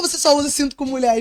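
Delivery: acted, half on-guard, defensive, pointed tone. Retelling own question to a young passenger: imitating own defensive question. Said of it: "Já assim, meio na, na defensiva".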